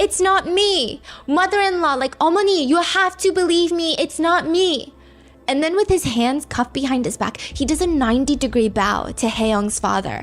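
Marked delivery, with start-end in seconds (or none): 0.0-4.9 high, all-out screaming outburst. Retelling a suspect dragged out of a funeral home: imitating someone screaming. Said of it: "he's screaming".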